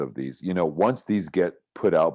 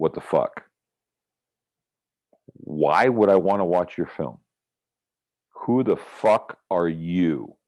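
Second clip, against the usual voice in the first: challenging, put-on tone with attitude. Staring at the camera and questioning a filmmaker: put-on attitude, challenging. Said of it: "a little attitude".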